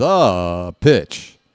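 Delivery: sports announcer call, long sound held and drawn out. Imitating a baseball announcer before a pitch: John Sterling call, holding the word THE. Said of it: "That's exactly what he does".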